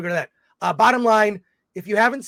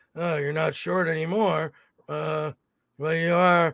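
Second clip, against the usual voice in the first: put-on gruff movie hero voice, lower; 4 semitones lower, 3 dB quieter than usual. Imagining the hero meeting a grown-up sidekick again: Harrison Ford impression. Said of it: "Trying to do Harrison Ford's".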